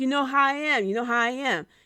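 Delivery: put-on New York accent. Recounting what was said, quote him in Eddie Kingston's New York accent. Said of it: "in his New York accent".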